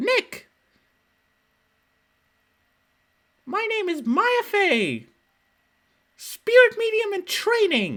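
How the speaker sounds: very high, animated, swooping shouting. Getting into the Maya zone by calling out to Nick: yelling in Maya Fey voice. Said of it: "I just yell Nick a bunch".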